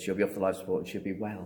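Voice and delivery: ordinary talk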